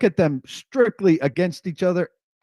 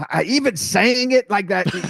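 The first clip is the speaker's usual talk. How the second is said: normal talking voice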